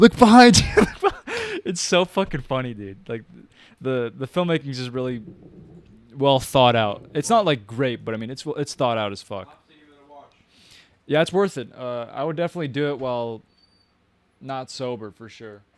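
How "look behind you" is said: loud high-pitched shout. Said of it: "are also yelling".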